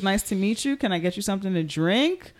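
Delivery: normal talking voice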